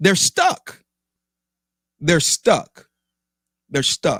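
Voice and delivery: exasperated, worked-up repetition with swooping pitch. Speaker venting about a pet peeve before calming down, worked up. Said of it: "you can probably tell in the tone of my voice".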